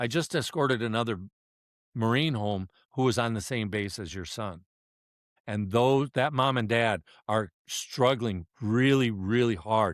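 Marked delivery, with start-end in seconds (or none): none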